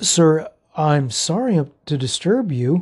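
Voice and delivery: somewhat hesitant. A narrator reads a young man addressing the narrator from behind, somewhat hesitant. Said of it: "the young man said somewhat hesitantly".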